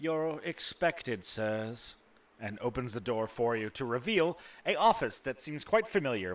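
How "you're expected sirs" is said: small, little devil servant voice. Voicing a servant devil who opens an office door for you; servant devil character voice. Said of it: "sort of servant-type devil".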